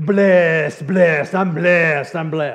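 bad Spanish accent, loud, exuberant, bursting with cheer. Retelling how Mauricio answered when asked how he was, bad Mauricio accent impression. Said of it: "sorry about the bad accent".

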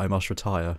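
put-on old-stage, theatrical, old-fashioned dramatic delivery. Retelling a line from the new film: mock shakespearean delivery. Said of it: "it's quite Shakespearean in this".

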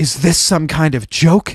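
hushed whisper. Narrator reads Anna asking David a question as he repeats his vows, whispered. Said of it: "she whispered to David".

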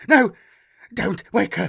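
very loud, high, panicked, terrified screech. Narrator reading a woman straining against her bonds as she cries out: terrified screech. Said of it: "She screeched".

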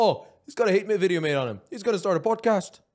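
put-on accent of Amsterdam. Imagining Jordy's reaction to a hate video made on you, as Jordy in a put-on Amsterdam accent. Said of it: "What accent was that?".

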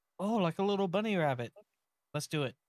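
bright, high, excited and happy cheer. Answering a companion's plan to hop over pipes: excited and happy. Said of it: "all excited and happy".

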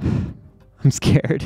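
scared sigh, whispered under the breath.

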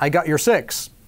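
normal talking voice

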